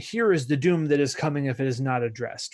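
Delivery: ordinary delivery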